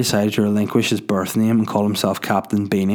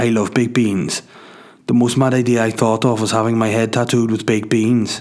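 put-on Welsh accent. Speaker quoting a Welsh man who got a charity head tattoo, Welsh accent. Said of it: "it's Welsh, so I'll do an accent".

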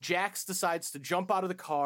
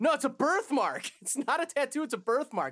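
acted, very high-pitched, awkward little delivery; 10 semitones higher than usual. Recounting a scene, quoting a man's daughter answering a question: mimicking an awkward reply. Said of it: "his daughter kind of awkwardly goes".

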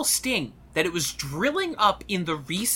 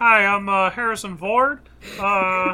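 very slow, drawn-out voice, every word stretched; 3 semitones higher, 4 dB louder than usual. Joining a bit where everyone sounds like George Lucas: George Lucas voice. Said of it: "they all sound like George Lucas".

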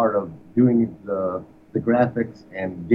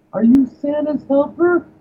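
put-on sheepish girl voice, much higher, louder; 4 dB louder than usual. Retelling a five-year-old girl's question to the colonel, imitating a sheepish little girl. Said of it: "Some little sheepish little voice".

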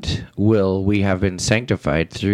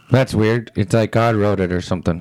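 usual speaking voice

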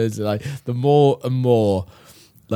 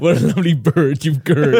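loud mock Swedish accent, cartoon Scandinavian cook voice; 4 semitones higher, 5 dB louder than usual. Mocking another speaker's attempted southern accent; mock Swedish Chef voice. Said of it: "That's a Swedish chef on the fucking Muppets".

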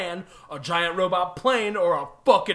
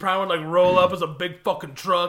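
usual speaking voice

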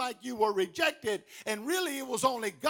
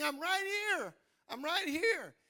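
acted, high, repeated child's cry; 6 semitones higher, 4 dB quieter than usual. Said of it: "And Johnny's screaming".

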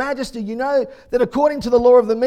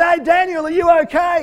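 put-on king voice, raised, pitched-up calling shout; 6 semitones higher, 4 dB louder than usual. Retelling the king calling down to Daniel in the den: acting out a yell. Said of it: "the king yells out".

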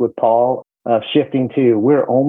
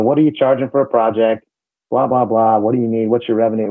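ordinary talk

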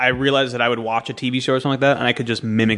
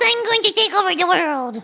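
put-on very high cartoon-girl voice with swooping, bouncing pitch. Asked to do their Bubbles impression, speaking in Bubbles voice. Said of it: "Do your Bubbles".

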